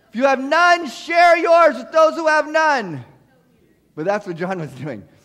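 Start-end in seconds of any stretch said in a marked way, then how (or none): 0.2-3.1 very loud, high, proclaiming shout. Retelling the Bible passage, the speaker quotes John the Baptist to the crowds, John the Baptist voice. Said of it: "That's my John the Baptist voice".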